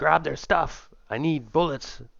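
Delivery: high, loud yelling in a character voice. Playing a wounded character, ordering another player to grab supplies: in-character yelling. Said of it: "I yelled at you".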